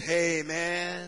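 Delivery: put-on rock-and-roll guy voice. Retelling meeting a guy, the speaker voices his greeting: imitating a Swedish rocker guy. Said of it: "He's a rock and roll Swedish guy".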